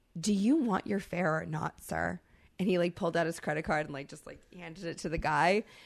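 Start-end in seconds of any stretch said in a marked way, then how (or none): 0.2-2.2 mock dead calm, very calm and ominous. Retelling a fare dispute, acting out Misha's calm, ominous voice. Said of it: "in like this very calm, very ominous voice".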